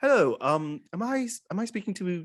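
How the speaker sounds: offhand, random put-on British accent. Retelling the start of a phone call, in a random British accent. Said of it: "And it's just random British accent".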